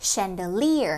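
chandelier with stress on third syllable -lier. Teaching english word stress, stress on third syllable of chandelier. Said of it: "trọng âm số 3 nhé".

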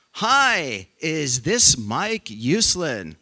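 acted-out exuberant voice. Recalling a phone call from Stan Lee, exuberant Stan Lee voice. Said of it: "this exuberant male voice".

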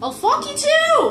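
high, slow, indignant voice.

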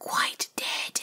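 hushed whisper. Reading a story aloud, voice a firework character's reply: whispered. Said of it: "whispered the Catherine Wheel".

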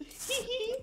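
very high mock ladyish giggle. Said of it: "The ladyish laugh from Grant".

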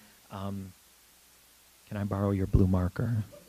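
very quiet, gentle, soft delivery. Retelling leaning over to ask her for a marker, retelling a quiet, gentle ask. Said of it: "very quietly, very gently saying".

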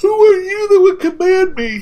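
loud words spoken through a yawn. Recording early in the morning, the speaker delivers a character line while yawning. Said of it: "I yawned when I said that".

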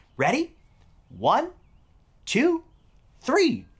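usual speaking voice

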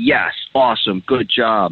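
strongly stressed, big, emphatic burst. Showing how to praise a dog the moment it sits: big emphatic praise. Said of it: "it's like a big emphatic, like".

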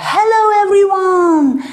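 high, booming, very loud call. Showing teachers how to greet an excited class: saying very loudly. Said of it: "Start by saying very loudly".

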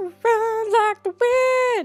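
high, slow, sing-song cheer.

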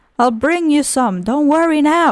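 ordinary delivery

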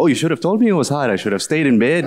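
put-on, dripping sarcastic high sing-song. Speaker retells what they say to people who call the work hard, acting out sarcasm. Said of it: "I'd say to them sarcastically".

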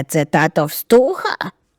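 low, ground-out growling delivery. Narrator reads the uncle's question to his nephew, growling. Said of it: "Врешті прогарчав він".

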